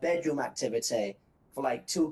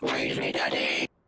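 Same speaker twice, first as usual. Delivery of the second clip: put-on devil voice, lower pitch; 13 semitones lower than usual. Saying the line after the other speaker dreads hearing Satan say it: Satan voice.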